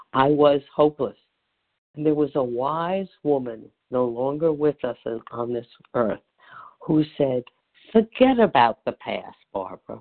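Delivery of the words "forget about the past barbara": put-on thick, laid-on Brooklyn accent, low and swooping. Quoting a late wise woman's advice, in a big Brooklyn accent. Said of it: "with a big Brooklyn accent".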